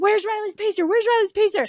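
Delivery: shrill, panicked, very high, frantic screamed call. Retelling a search for a missing pacer: imitating screaming a name. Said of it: "screaming her name".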